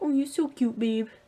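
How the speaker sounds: put-on weird, high, loud cooing baby voice.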